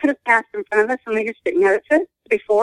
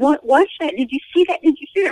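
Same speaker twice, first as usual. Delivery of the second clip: put-on frantic, freaked-out screaming; 4 semitones higher than usual. Recalling a sudden strange encounter with a companion, reenacting own screaming. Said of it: "I was screaming".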